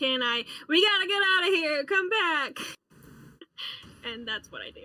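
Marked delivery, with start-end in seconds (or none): 0.7-2.6 loud, high-pitched, urgent shouted call. In a game, a player's character yells to Kenai during a fight.: yelling. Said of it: "and yell".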